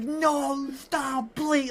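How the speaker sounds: very high, sobbing, tearful pleading voice. Retelling a wrestling moment, imitating Paul Heyman in tears. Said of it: "just utter tears".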